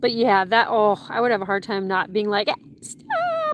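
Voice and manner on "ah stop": play-acted very high shrieking yelp. Picturing stopping a child lifting a rabbit by its ear: imagined screaming.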